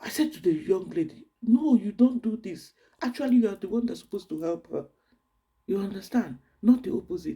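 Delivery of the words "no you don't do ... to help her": urgent, protesting, screaming voice. Retelling telling off a young lady at the luggage belt: imitating herself screaming. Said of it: "I started screaming".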